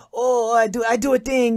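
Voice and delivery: thick Chinese accent. Showing the stereotype that other actors used: stereotypical thick Chinese accent. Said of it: "real thick Chinese accent".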